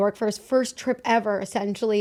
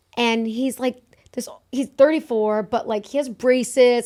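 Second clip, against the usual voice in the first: ordinary delivery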